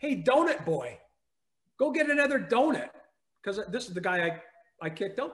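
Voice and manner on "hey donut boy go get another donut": acted-out loud, high-pitched heckling yell. Retelling what a man yelled in the parking lot: imitating someone yelling. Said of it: "He's yelling at me".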